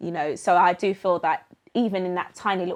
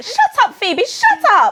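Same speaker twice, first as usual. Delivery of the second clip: very high, very loud, swooping shrill mum voice; 11 dB louder than usual. Retelling how mum reacts to the teasing: imitating mum. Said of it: "And my mum will go".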